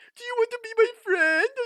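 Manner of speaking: goofy put-on dopey voice, very high and loud. Retelling telling stories to people who kept laughing, in a goofy dumb voice.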